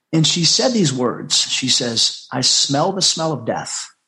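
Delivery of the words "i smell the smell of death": plain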